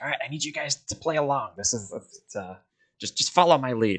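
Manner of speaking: high-pitched, hushed half-whisper. Leaning forward to tell the group to play along and follow his lead: Droop half-whispering. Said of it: "he's still whispering".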